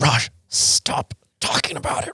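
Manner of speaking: slow, angry whisper-yell. Showing how it sounds when you're mad, the speaker does an angry whisper-yell. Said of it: "I love whisper yelling".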